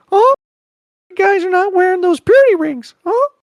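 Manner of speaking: very high, loud, squeaky voice. In a Mickey impressions face-off, doing a South Park Mickey Mouse impression. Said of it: "The one that I can do really well is the South Park rip".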